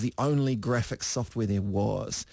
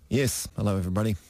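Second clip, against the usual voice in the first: deadpan, straight-faced, expressionless delivery. A returning guest greets the show's listeners, deadpan. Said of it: "trying the deadpan?".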